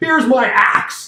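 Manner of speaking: shrill, very loud, high proclamation-style delivery. Playing a warrior striking an enemy, saying it very loudly. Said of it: "I say very loudly".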